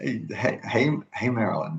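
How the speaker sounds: hushed half-whisper. Greeting someone while hiding from dogs, half-whispering. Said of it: "why are we whispering?".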